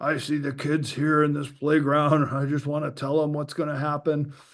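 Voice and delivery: hoarse, rasping, really raspy voice. Quoting a CIA whistleblower from 1989, raspy voice imitation. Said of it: "he had that really raspy voice".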